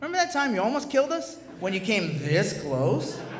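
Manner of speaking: laughing, teasing tone.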